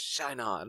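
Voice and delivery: hushed whisper. Playing a character firing a gun into the water: whispering. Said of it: "he whispers".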